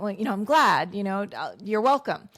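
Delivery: mock giggling, halting, pleased-sounding voice. Retelling how some instructors answer a tired class member: imitating a giggling reply. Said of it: "giggle at that and be like".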